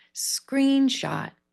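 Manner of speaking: screen stressed on first syllable, shot kept small. Guiding Mira through a stress exercise on one word: big 'screen', small 'shot'. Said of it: "We're going to go big, small".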